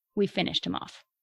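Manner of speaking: normal talking voice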